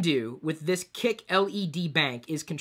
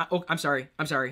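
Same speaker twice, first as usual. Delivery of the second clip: normal talking voice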